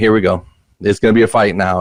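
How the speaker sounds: normal talking voice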